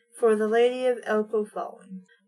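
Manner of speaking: ordinary talk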